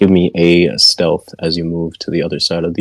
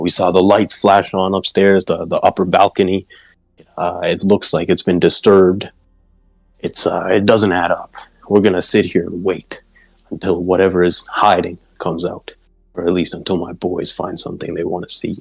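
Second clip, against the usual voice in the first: plain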